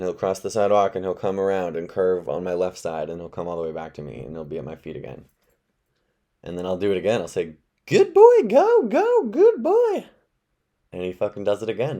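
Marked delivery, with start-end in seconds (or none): 7.9-10.0 very high, loud, swooping, drawn-out falsetto. Calling the dog back around to the speaker's feet: high falsetto voice. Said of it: "without the falsetto voice".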